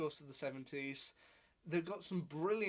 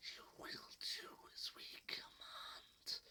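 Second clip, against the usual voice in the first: hissed slowly in a whisper. Describing the Sea Devils' scary voice, the speaker demonstrates their whisper hiss. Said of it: "just the kind of whisper hiss that they have".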